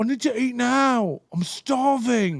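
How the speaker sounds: put-on drawn-out British accent. Retelling what a hangry friend said about being hungry, in a british accent. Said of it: "but like in a British accent".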